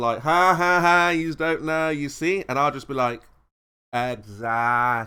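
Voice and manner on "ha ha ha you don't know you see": put-on laughter, laughing at someone. Show how he'll start laughing instead of saying exactly, imitating someone laughing at you. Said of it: "he'll start laughing at you like".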